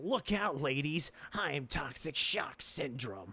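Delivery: booming comic-book cartoon villain voice. Joking that a disease name sounds like a villain: Static Shock villain voice. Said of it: "sounds like a Static Shock villain".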